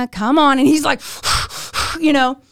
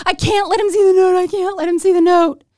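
mock crying, high and tearful; 5 semitones higher than usual. Retelling how she pleaded when asked about a note, retelling crying while pleading. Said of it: "I'm like crying".

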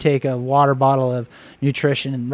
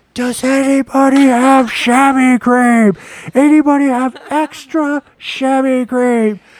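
very high, drawn-out scream at full volume; 11 semitones higher, 6 dB louder than usual. Near a race start line, Kelly shouts a request; retelling Kelly's scream. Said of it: "And she screams".

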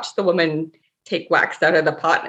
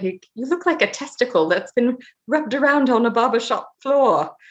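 put-on very British accent laid on thick, pitched up; 7 semitones higher than usual. Quoting the speaker's British husband's remark to the speaker, in a very British accent. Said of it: "he said with his very British accent".

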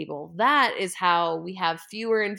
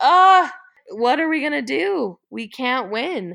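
high, loud, devastated wail of despair. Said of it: "I was just devastated and thought".

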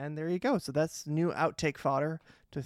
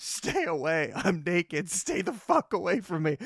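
play-acted hurt, embarrassed, slow, drawn-out screaming; 3 semitones higher, 4 dB louder than usual. Retelling a fall, warning a relative to stay away: imitating own scream. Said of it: "Then I just have to scream".

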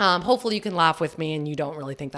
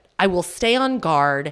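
ordinary delivery

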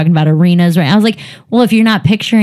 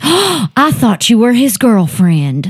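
put-on tipsy Southern woman, slow swooping drunk drawl; 4 semitones higher than usual. Retelling what a heckler in the front row said: imitating a drunk Southern woman. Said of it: "the drunk Southern woman in the front row just goes".

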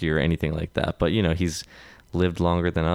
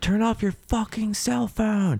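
mock shrill, high, escalating, furious angry shout. Recounting an audience member yelling over a ringing phone, retelling an angry yell. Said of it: "escalated angry repeat of shouted demand".

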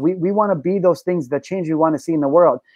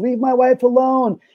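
mock screaming, high, drawn-out, full volume; 8 semitones higher than usual. Retelling what a husband in a video screams: imitating someone screaming. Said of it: "He's screaming at the top of his lungs".

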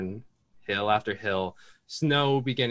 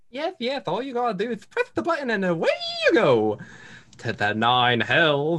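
very high cartoon voice, swooping way up; 10 semitones higher than usual. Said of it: "I don't know what that voice was".

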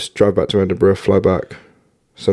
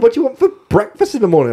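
put-on friendly, cheery host voice, higher. Retelling how the farmhouse hosts greeted them: imitating friendly cheery hosts. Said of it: "the most friendly, cheery people".

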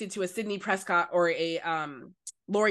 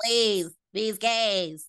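creepy killer-doll voice; 3 dB louder than usual. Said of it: "that's my M3GAN voice".

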